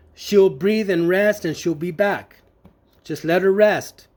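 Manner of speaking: ordinary talk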